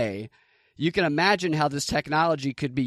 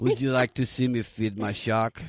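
fake Russian accent, lower pitch; 4 semitones lower than usual. Joking about a businessman who feeds his shark: put-on russian accent. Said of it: "Is that Russian?".

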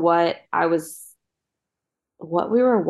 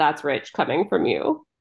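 normal talking voice

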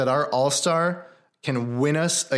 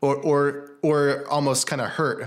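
plain

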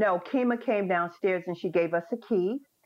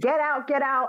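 put-on drunken, high-pitched screaming yell; 8 semitones higher, 3 dB louder than usual. Retelling what a stranger shouted on walking into the room: imitating someone screaming. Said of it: "she started screaming".

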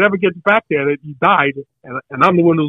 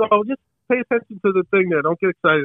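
put-on Italian accent, higher pitch; 4 semitones higher, 4 dB quieter than usual. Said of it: "and he's got an accent".

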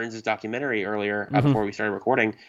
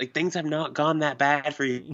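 put-on yell, higher pitch; 5 semitones higher than usual. Retelling watching a movie, imitating yelling at the TV. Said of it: "yelling at the T V".

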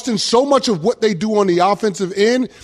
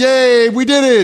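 mock sarcastic celebration, higher and louder; 4 semitones higher, 4 dB louder than usual. Retelling the other speaker's reaction to a game four win: imitating a sarcastic cheer. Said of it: "There was so much sarcasm in your voice".

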